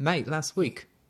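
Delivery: put-on Australian accent. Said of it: "Australian accent on here?".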